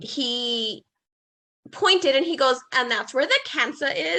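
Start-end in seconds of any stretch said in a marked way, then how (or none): 2.7-4.2 horrible, clumsy, botched put-on Australian accent. Retelling what a doctor said: bad Australian accent. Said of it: "forgive my Australian accent, which is horrible".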